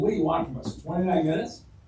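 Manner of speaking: put-on snide, sarcastic tone. Retelling a doctor's sarcastic reply: imitating a sarcastic doctor. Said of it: "one of the doctors said to me sarcastically".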